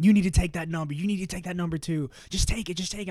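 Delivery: high, passionate, insistent, pushy screaming. Retelling how mom pushed on a phone call: imitating mom screaming. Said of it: "she was screaming, she was screaming, she was passionate about it".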